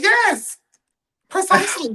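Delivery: high-pitched voice. Recalling a validating moment when somebody finally called it out, agree in a JT voice. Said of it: "In my J T voice".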